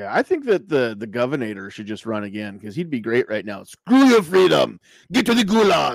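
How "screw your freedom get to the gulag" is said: loud, bad put-on Austrian accent. Imagining the governor running again, bad Schwarzenegger impression, Austrian accent. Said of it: "that's a bad Schwarzenegger impression".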